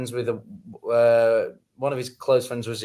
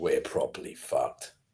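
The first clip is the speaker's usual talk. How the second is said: breathy, hushed near-whisper, going deeper; 11 semitones lower, 8 dB quieter than usual. Told to go deeper than that, the speaker redoes the line in a deeper voice. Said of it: "you need to go deeper than that".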